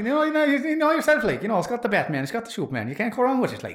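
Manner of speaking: exaggerated Irish accent.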